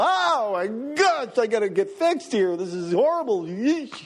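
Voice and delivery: high, dragged-out, horrified dismay. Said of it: "You look in the mirror and go".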